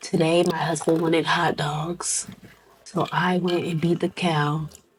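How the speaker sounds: soft, ASMR-style narrating voice. Imitating a cooking video creator: Nara Smith voice. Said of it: "a Nara Smith voice".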